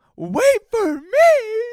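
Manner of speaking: very high, very loud, shrill, terrified wailing cry. Retelling a guy yelling as friends take off without him: imitating a terrified cry. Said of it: "the fear in that voice".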